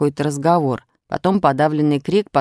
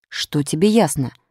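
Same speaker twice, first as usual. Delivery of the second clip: ordinary delivery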